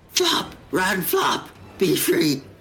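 dying man voice. After a missed roll in a game, calling out, sounding like a dying man. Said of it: "Now that sounds like a dying man".

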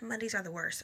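normal talking voice

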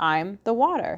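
plain

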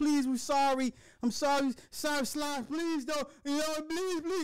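put-on crying, high-pitched, tearful and desperate. Retelling people crying and begging to be spared: imitating crying pleas. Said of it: "these bitches are crying and like".

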